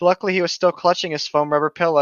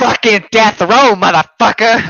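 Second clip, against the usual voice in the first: slow, loud, drawn-out snarl; 6 semitones higher, 8 dB louder than usual.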